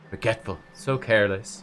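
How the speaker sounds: mumbling under breath. Narrator reading the words of a bleeding man, muttering. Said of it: "he mutters".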